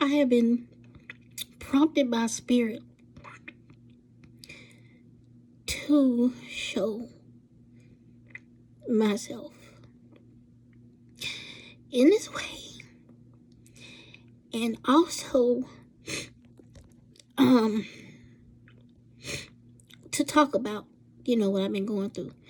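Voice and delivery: crying hard. Opening up to viewers about what they have been going through, crying hard. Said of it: "the reason why I'm crying so hard".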